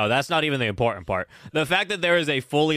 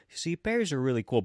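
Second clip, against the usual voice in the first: put-on sweet tone, quieter; 2 semitones higher, 6 dB quieter than usual. Retelling a character's speech about bears: imitating a sweet tone. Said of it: "he starts out, like, really sweet".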